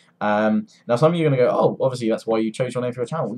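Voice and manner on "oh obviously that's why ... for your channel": ordinary talk, nothing marked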